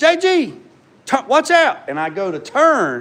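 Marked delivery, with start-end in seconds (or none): 0.0-1.9 shrieked, very high-pitched hollering. Retelling how someone hollered a warning at you, retelling a holler. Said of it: "They holler".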